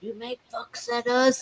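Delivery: eerie, spooky, hushed ghostly put-on whisper. Joking about haunting someone as a ghost: put-on ghostly whisper. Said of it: "we'll whisper at her".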